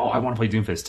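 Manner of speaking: mock excited, amped-up voice. Describing players picking the new hero: imitating excited players. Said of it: "amped up for the first time".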